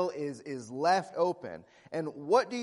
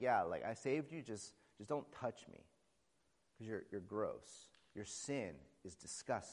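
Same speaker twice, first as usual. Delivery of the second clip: put-on disgust, much lower, quieter, faster; 8 semitones lower, 13 dB quieter than usual. Speaker acts out how God looks at them, acting out God's disgust. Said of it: "he kind of looks at me with disgust and he's like".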